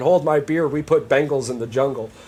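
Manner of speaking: usual speaking voice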